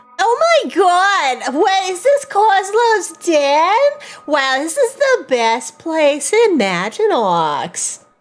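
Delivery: swooping female goblin voice with the word god drawn out. Speaking as a disguised character when asked: goblin female voice. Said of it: "you're gonna have to say stuff in the goblin voices that you made".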